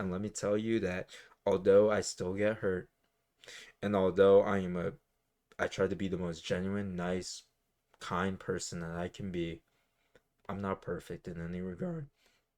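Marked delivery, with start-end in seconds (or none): 10.5-12.1 very quiet voice, cracking midway. Speaking openly about growing from a past situation, voice cracking. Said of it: "That's a good voice crack".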